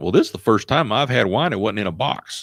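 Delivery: put-on heavy Alabama accent, laid on thick. Retelling what the college newbie Joe said, in Joe's thick Alabama accent. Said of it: "says in his little his thick Alabama accent".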